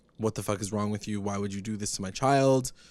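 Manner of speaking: ordinary delivery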